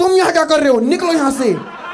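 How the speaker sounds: high-pitched, loud mock shout.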